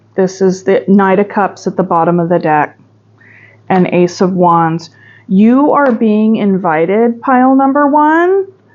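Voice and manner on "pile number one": high, raised voice calling out. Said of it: "I'm, like, raising my voice".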